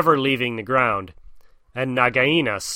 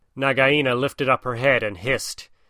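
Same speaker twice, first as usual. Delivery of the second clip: plain reading voice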